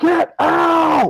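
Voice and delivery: very high, long held-out ghostly scream. Imagining a ghost reacting to a planned film: imitating James Dean's ghost screaming. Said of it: "James Dean's ghost just start screaming".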